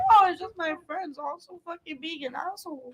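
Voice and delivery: high, soft, fake crying through the words. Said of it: "why are you crying, bro?".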